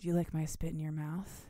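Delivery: whispering. Retelling a book scene where a character leans in and whispers: whispering a character's line. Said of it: "he leans in and whispers".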